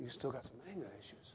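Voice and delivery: small, still, very soft, very low and hushed. Speaker retells a prayer; the reply comes in a small, still voice. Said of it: "Small, still voice".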